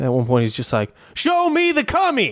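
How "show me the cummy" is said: imitated over-excited shout, higher. Retelling a sketch where Cuba Gooding Jr. gets pumped up: imitating Cuba Gooding Jr. excited. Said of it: "starts getting too excited".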